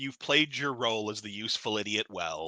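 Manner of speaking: condescending, patronizing, nasty, mean tone. Suggesting a line for the president to say to Cobra: acting condescending and nasty. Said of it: "real condescending, real nasty".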